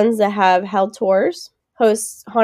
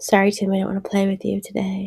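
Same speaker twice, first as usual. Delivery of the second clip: eerie delivery, quieter; 6 dB quieter than usual. Saying a line to an imagined ghost boy: creepy way of saying it. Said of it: "How you said that was creepier".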